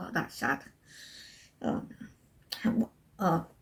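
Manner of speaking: teary, breathy, choked-up, hushed near-whisper. Reacting to a sad book description just read aloud: tearing up. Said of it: "why am I tearing up at that?".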